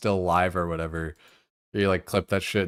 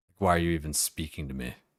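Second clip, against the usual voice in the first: put-on disgusted tone, lower pitch; 4 semitones lower, 5 dB quieter than usual. Speaker acting out how they talk to other people, in a mock-disgusted tone. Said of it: "just kind of like disgusted tone".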